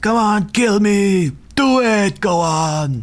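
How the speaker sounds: very high, very slow, each word drawn out. Recall the end of Predator as the creature comes to finish him off, with an Arnold Schwarzenegger impression. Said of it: "channeling Arnold Schwarzenegger".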